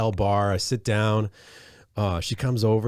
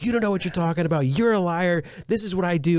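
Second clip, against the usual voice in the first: relentless high berating yell, acted out; 9 semitones higher than usual. Retelling how the server argued in front of the manager: imitating someone yelling. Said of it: "continues to be yelling at me".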